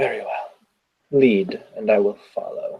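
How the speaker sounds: weary, sighed-out delivery. Voicing a character who sighs and agrees to follow: sighing in character. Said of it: "She kind of sighs".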